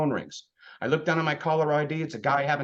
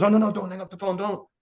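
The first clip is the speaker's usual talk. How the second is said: everyday talk, normal delivery, nothing put on; 4 semitones higher than usual. Retelling a friend's phone call about insurance: Tony Capistrano impersonation. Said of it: "He goes".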